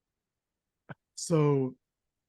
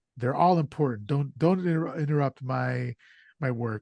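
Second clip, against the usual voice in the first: usual speaking voice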